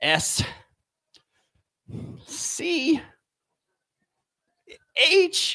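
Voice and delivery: timid, intimidated, fearful, spelled out letter by letter. Speaker recalls a company's phone rep spelling their name, imitating a scared phone rep. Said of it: "I can hear the fear in their voice".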